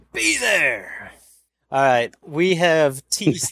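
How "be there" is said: pitched-up radio promo sign-off voice. Closing a race event announcement, channeling Steve Evans. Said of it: "I'm channeling my inner Steve Evans".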